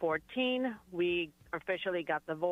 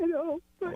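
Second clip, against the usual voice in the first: very high, tearful voice, crying through the words; 11 semitones higher than usual. Thanking the others for being her strength, crying while talking. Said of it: "Don't cry".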